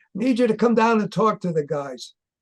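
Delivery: mock big, loud, booming voice. Recounting a phone call from Paul, imitating Paul's booming voice. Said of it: "he had this booming voice".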